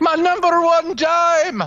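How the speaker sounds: very high-pitched, slow, drawn-out cartoon duck voice. Talking about voices with friends, showing off: Scrooge McDuck voice. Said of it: "I can do a really good Scrooge McDuck".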